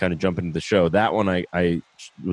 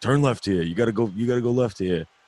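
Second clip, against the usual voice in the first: put-on Staten Island New York accent; 4 semitones higher than usual. Speaker retells a man in the car giving directions, in a Staten Island accent. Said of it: "he's just got this accent".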